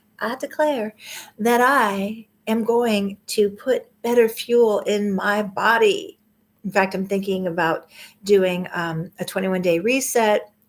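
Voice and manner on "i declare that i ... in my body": slow, drawling put-on Southern accent. Speaker makes a declaration to listeners, said in a southern accent. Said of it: "if you can say it with a southern accent".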